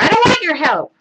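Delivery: put-on yell. Acting out a kindergartner at the table telling the teacher off, mock yell. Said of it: "I just yelled that".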